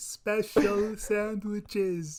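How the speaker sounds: put-on slow speaking. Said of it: "I'm speaking slowly".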